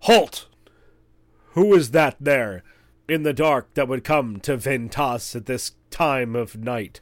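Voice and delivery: loud, rough, bellowing hobgoblin voice. Guards challenge the group approaching the light in the dark, bellowing in rough common. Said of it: "you hear them bellow in sort of a rough common".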